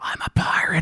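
hushed, breathy whisper under the breath. Retelling going up to the bar at a party: whispering a line. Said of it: "I go up and whisper it".

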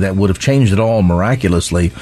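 ordinary delivery

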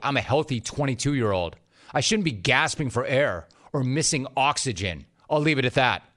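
ordinary delivery

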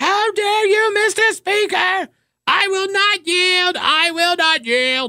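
very high, frantic, shrieking screaming outburst. Retelling how a lawmaker screamed from the floor: imitating someone screaming. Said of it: "started screaming from the floor".

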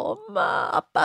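put-on high-pitched, tearful crying in a child's voice.

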